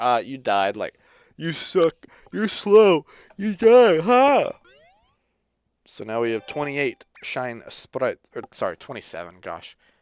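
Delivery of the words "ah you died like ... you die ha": mocking taunting voice, higher and louder. Retelling what the racer in the game says when you lose: imitating a taunting racer. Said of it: "he's just like".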